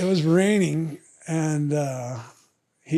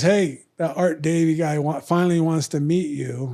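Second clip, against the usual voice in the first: normal talking voice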